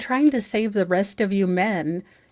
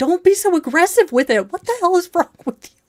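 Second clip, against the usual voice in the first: very high-pitched, shrill, loud yelling; 9 semitones higher, 6 dB louder than usual. Retelling yelling at a child: imitating herself yelling. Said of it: "I remember one time yelling".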